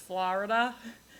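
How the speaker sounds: New York Long Island accent. Showing tri-state listeners a familiar way to say Florida, in a Long Island accent. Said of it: "the sort of like Long Island pronunciation of Florida, which is".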